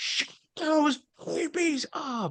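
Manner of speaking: mock very high, wailing, crying teenage scream. Retelling how a teenager in the theater yelled at crying babies: imitating a teenager screaming. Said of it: "started screaming".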